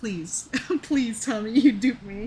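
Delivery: crying through actual tears, tearful pleading. Pleading with the people who made you cry with a plot twist, crying. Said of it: "I'm crying right now".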